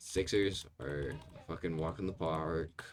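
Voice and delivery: odd, slow, drawn-out phrasing.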